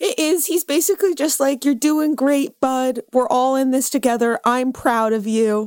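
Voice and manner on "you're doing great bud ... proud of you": earnest, loving, encouraging tone. Retelling a video where Steve speaks to camera: imitating Steve, earnest and loving. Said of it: "in a very, like, earnest and, like, loving way".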